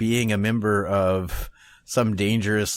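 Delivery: ordinary delivery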